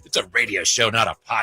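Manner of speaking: sharp, curt, touchy, irritated snap. Retelling how the other speaker answered a fan: imitating someone snapping. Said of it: "you snapped at him".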